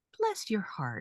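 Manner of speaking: sweet, soft, sugary put-on southern accent. Speaker retelling a patronizing reply; imitating a sweet southern voice. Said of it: "it was a southern a southern voice".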